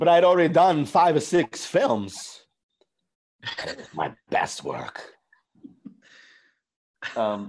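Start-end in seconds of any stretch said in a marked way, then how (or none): 0.0-5.0 put-on quirky halting voice, higher and louder. Answering a request for a Chris Walken: Christopher Walken voice. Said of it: "I don't even know if that was good".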